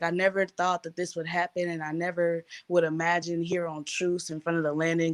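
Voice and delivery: normal talking voice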